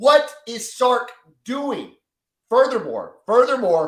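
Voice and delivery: worked-up, heated voice. Breaking down a game's stats for another speaker: fired up. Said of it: "I'm getting fired up for you".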